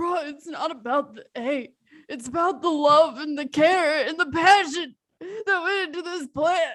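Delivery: crying through the words, tearful. Answering someone who says it's fine, acted crying. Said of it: "don't cry".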